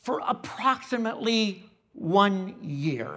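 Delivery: emphasis placed on the word approximately.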